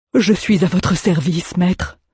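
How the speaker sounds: quavering, choked-up, trembling voice. Narrator reads Almar answering his master, quiet trembling voice. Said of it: "Almar ne parvenait pas à parler tout haut".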